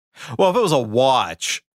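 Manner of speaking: dismissive and contemptuous, full of disdain. Answering a question about a valuable family watch: contemptuous. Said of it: "You say that with such contempt".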